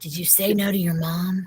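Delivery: hushed, quiet half-whisper. An unidentified caller speaks over the phone to the narrator, half-whispering. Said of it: "A voice whispered".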